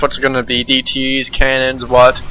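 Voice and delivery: plain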